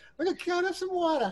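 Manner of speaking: put-on grandmother voice, pitched very high. Speaker showing how they talk to their new cat: imitating their grandmother. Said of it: "it's like my grandmother".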